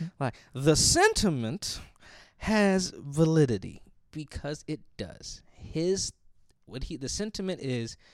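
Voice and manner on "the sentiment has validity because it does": slow, drawn-out preacher-style cadence. Repeating a point the way preachers say something again, slow preacher-style repeat. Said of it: "say something once and then say it slow again".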